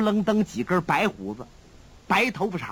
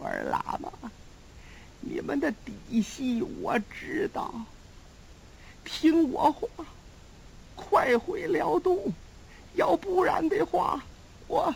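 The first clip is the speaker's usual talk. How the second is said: gasping, breathless near-whisper, barely any breath, dying voice; 9 semitones higher, 5 dB quieter than usual. A storyteller voices a strengthless character warning the lamas, gasping for breath. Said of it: "喘了半天气儿".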